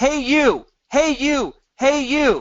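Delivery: high, loud yelling. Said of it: "going into a marketplace and yelling".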